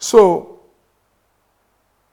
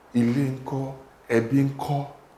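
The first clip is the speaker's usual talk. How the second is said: normal talking voice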